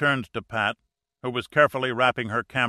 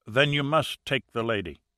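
ordinary delivery

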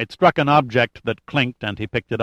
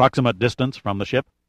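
plain reading voice

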